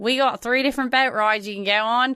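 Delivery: bad put-on Australian accent. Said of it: "she was forced to keep it up".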